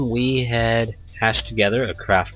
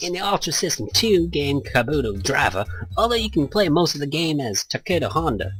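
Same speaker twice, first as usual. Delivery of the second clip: bad put-on Cockney accent, pitched higher; 4 semitones higher than usual. Reading game text aloud in a put-on accent: bad Cockney accent. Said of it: "it's really bad, but let's do this".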